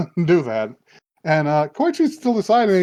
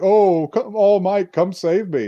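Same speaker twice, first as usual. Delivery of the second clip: slow, mocking, goading taunt; 4 semitones higher than usual. Retelling a scene where thugs taunt a woman: imitating a taunting voice. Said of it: "they're taunting them".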